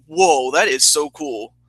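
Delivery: normal talking voice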